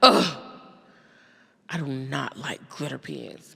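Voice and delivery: utterly repulsed, dismissive tone of pure disgust. Retelling how her kid reacted to a gift: imitating her kid's disgust. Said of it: "in pure disgust".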